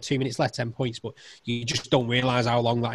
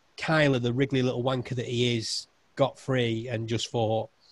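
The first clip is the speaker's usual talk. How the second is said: plain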